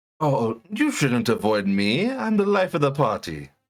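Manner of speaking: very grand, self-important, pompous delivery. A party guest answering who the visitors should avoid, very pompous. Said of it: "very pompous".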